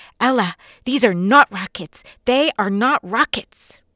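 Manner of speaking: loud, horrified, embarrassed words blurted out suddenly. Parenting podcast host retelling how he corrected himself, retelling a quick blurt. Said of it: "he quickly blurted out".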